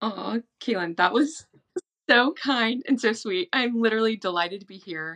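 slightly teary, welling up a little. Guest thanks her friend the host for a kind welcome, tearing up a little. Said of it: "Tearing up a little bit".

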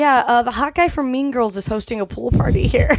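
ordinary delivery

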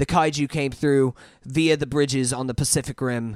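put-on very strong British accent laid on thick. Retelling a line from the movie: John Boyega's super British accent. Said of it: "John Boyega in his super British accent".

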